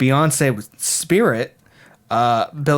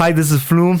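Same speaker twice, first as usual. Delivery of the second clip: clumsy, unconvincing, really bad put-on Indian accent; 4 semitones higher, 4 dB louder than usual. Demonstrating how to say an artist's name, in a really bad indian accent. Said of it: "was like a really bad like Indian accent".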